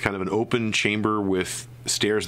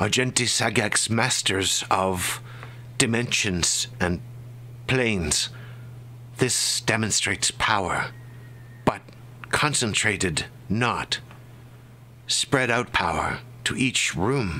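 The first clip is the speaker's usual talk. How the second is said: strange, sibilant put-on voice. Game master voices Gosh speaking inside the players' heads, strange sibilant voice. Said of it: "the strange, sibilant voice of Gosh".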